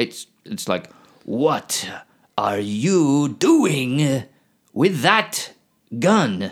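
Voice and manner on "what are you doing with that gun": stilted, very slow, halting, word-by-word delivery. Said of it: "Like he's trying to read it word by word".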